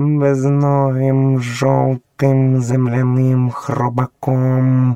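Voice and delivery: words squeezed and strained through clenched teeth. Narrator reading Bagheera's line as she tries to recall something: through gritted teeth. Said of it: "процідила крізь зуби Багіра".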